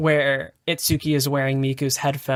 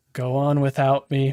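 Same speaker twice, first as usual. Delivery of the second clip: imitated flat, deadpan delivery. Retelling a character's line as he is dragged away: imitating a flat delivery. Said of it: "very flat about it too".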